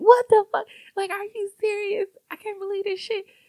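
mock very high-pitched, disbelieving, exasperated yelling. Speaker recounting watching Insecure, retelling yelling at the TV. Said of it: "I found myself yelling at the TV like".

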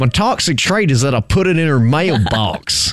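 put-on American accent. Repeating a line on request, now in a put-on American accent. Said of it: "say it one more time, but as an American".

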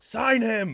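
very high, shrill, full-throated yell at top of lungs. Retelling a reaction to a home run: imitating a yell at top of lungs. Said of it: "Bryce just yelled at the top of his lungs".

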